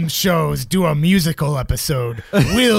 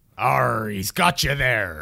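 put-on low pirate voice; 6 semitones lower, 5 dB quieter than usual. Joking after a rundown of trooper and captain ranks, the speaker chimes in with a pirate voice. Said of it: "just leave the pirate parts".

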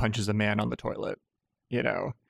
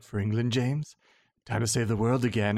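put-on creepy villain voice. Imitating how Trevelyan talks to Bond in the opening: creepy Trevelyan voice. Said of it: "Why is he talking so creepy".

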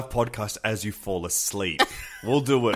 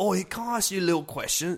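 very high, put-on Scouse English accent; 9 semitones higher, 3 dB quieter than usual. Imitate the accent they were doing for the others, in a slightly Scouse English accent. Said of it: "bit of a little English accent".

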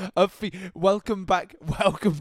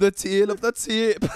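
muddled mix of Geordie and Scottish accents; 3 semitones higher, 3 dB louder than usual. Repeating a phrase after slipping into an odd accent: awkward Geordie-Scottish accent. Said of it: "That was like an awkward Geordie Scottish hybrid".

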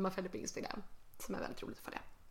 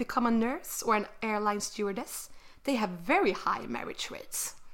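put-on slow, horrible English accent. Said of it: "bear with my horrible English accent".

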